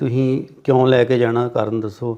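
usual speaking voice

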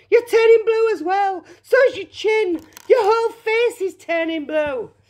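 screamed out, very high pitch. Mrs. Beauregard to her daughter Violet, who keeps chewing, screaming. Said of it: "screamed Mrs. Beauregard".

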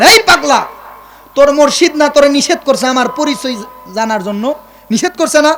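loud, high, barked scolding tone. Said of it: "ইমাম সাহেব একটা ধমক দিলেন".

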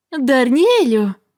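overdone, exaggeratedly joyful, cheerful call. Reading a first-person narrator greeting a man while offering a handshake: exaggeratedly joyful exclamation. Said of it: "Перебільшено радісно вигукнула я".

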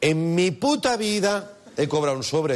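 stress on puta.

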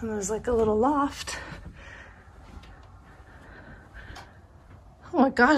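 out of breath. Giving a house tour while climbing the stairs, out of breath. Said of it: "I'm out of breath".

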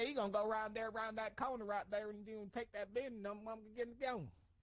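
high-pitched, put-on rural country accent. Imitating country coworkers where the speaker lives, country accent impression. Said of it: "my best impersonation of where I live at right now? Because they are country".

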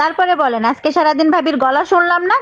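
high-pitched put-on woman's voice.

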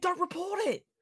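play-acted screaming, high and urgent. Retelling shouting at a teammate not to report: retelling a scream. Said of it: "And I was screaming".

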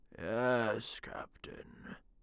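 slow, breathy, drawn-out whispered drawl. The men answer their captain in unison, drawling. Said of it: "The men drawled".

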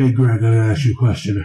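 creepy, low-pitched voice.

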